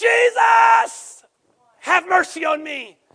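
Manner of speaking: very slow, high, loud bold shout, "Jesus" stretched. Retelling a blind man calling out to Jesus as he walks by, retelling a bold cry. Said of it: "then he gets real bold".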